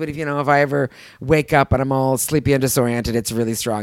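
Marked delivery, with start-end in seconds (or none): none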